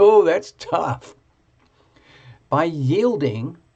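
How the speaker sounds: loud, giggly voice, talking through giggles. Reading a card aloud to Dracaena, you have to stop and start again, giggling a bit. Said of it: "I'm kind of giggling a bit".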